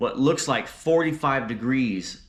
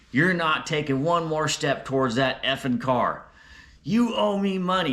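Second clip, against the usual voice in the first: high-pitched, screaming, raving, ranting yell; 5 semitones higher than usual. Retelling how a woman stopped them approaching the car: imitating a woman screaming. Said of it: "she's just screaming and yelling".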